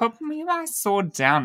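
slow, whiny accent.

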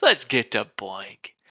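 on-air radio DJ announcer delivery. Moving on to the news, trying out a radio announcer voice. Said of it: "How was that for a radio voice?".

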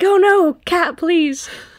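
high, loud, frantic pleading. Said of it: "And you're like".

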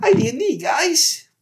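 little squeak voice. Plugging the show's d&d hashtag as told to, little squeaky voice. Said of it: "You have to say that little squeaky voice".

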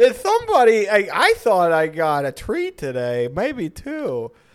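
high, swooping, loud, sing-song camp cat voice.

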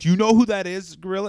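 frantic, very loud, high-pitched outburst. Retelling a commentator reacting to a debut: imitating Bobby Heenan freaking out. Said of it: "Bobby Heenan freaking out".

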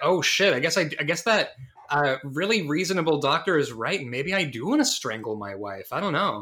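ordinary delivery

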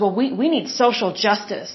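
fervent, zealous, insistent tone. Retelling what a lady at the table said: imitating a fanatical lady. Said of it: "she was really, like, just crazy about it".

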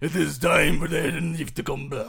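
loud put-on Japanese accent. Playing a village leader again: put-on Japanese accent. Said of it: "the accent's very".

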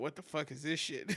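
ordinary talk, nothing marked

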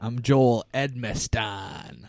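eighties pro wrestler-style voice. Introducing oneself at the start of the podcast, like a wrestler. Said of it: "that's how you say your name, huh?".

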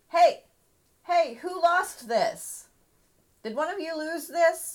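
loud, very high-pitched hollering yell. A player's character at the edge of the fight picks up a sash: yelling. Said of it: "basically yells".

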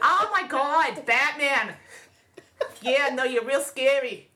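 put-on slow, drawn-out New Jersey accent. Imagining Batman's villains with Jersey accents, doing Harley voice, Jersey accent. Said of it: "all of Batman's villains with Jersey accents".

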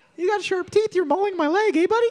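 very high-pitched, squeaky cartoon mouse voice. Talking to an animal with sharp teeth mauling a leg, high cartoon-mouse voice. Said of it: "now you sound like Mickey Mouse".

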